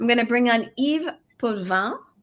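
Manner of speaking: put-on French accent. Introducing a guest by name, trying a put-on French accent. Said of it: "I'll see if I can throw in my French accent".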